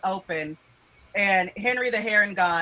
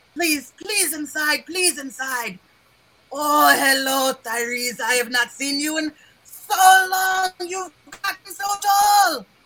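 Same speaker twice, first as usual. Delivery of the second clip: put-on high, raised, elderly rabbit creature voice; 7 semitones higher, 5 dB louder than usual. Voicing an old rabbit elder greeting guests at the door: voicing an old rabbit-folk elder. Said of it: "the oldest looking rabbit you have ever seen".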